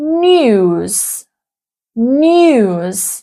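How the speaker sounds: British pronunciation of news with yod, nyooz. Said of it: "we would pronounce".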